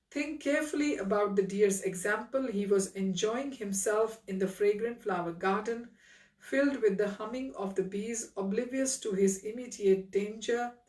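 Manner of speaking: ordinary delivery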